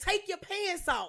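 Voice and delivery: play-acted, high-pitched shouted yell. Retelling what was yelled at him: imitating own past yell. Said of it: "'cause I was yelling at him".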